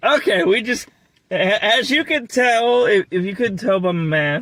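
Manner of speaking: full-on, high-pitched screaming up close. Starting a review next to another person, screaming. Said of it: "you don't need to be screaming at me".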